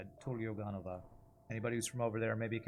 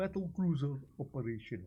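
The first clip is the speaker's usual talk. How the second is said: put-on Russian accent, higher pitch; 3 semitones higher than usual. Quoting a line from the game: imitating a russian accent. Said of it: "I think that's supposed to be a Russian accent".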